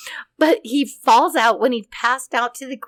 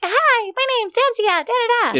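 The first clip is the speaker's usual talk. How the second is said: very high, squeaky helium voice; 11 semitones higher than usual. Speaker describes sucking on a balloon, imitating a helium voice. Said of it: "It's helium".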